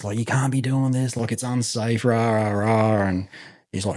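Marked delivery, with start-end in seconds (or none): 0.2-3.1 mock stern sergeant major yelling. Retelling an officer scolding from a tank: imitating someone yelling. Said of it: "he's yelling at me".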